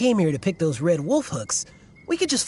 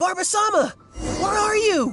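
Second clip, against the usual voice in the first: shrill, very high, drawn-out yell; 9 semitones higher than usual. Calling out while searching for barber-sama: yelling. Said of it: "Unless we could start yelling too".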